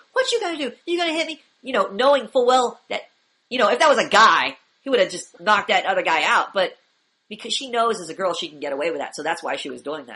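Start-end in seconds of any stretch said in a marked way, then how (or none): 0.2-1.4 very high, shrill screaming. Retelling a video where a girl confronts a seated guy: imitating a girl screaming. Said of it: "just screaming in his face".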